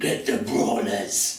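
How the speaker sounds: growled creature voice, very low. The game master voices a creature behind the door, growling creature voice. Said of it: "you hear the growling voice of a creature going".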